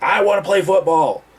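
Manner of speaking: shrill, very high, very loud full-throated scream. Retelling what a patient screamed at the speaker: imitating someone screaming. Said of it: "he's screaming at me".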